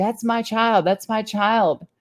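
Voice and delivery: insistent, high, urgent, motherly shouting. Retelling how their mom confronted a police officer, imitating someone shouting. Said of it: "starts walking towards the police officer shouting".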